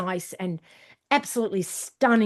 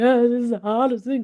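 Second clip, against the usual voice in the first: loud mock crying, miserable wailing lament; 3 semitones higher, 5 dB louder than usual. Retelling what runners in YouTube videos say: imitating runners crying. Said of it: "they're just crying and going".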